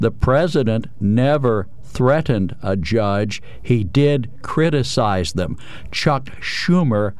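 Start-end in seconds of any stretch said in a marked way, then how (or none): 0.0-5.6 condescending, slow, low, deliberate, word by word. Defending the president in a discussion with Chris, saying it slowly. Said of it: "I'll say this slowly so you can understand it".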